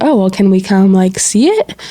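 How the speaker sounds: ordinary delivery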